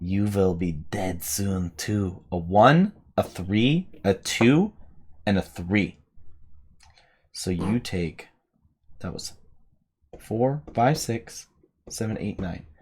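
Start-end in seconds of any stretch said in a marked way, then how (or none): 0.0-2.2 spooky whispering voice. Voicing whispers in a player's head after an attack: whispering voice in the head. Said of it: "He's whispering dissonantly at me".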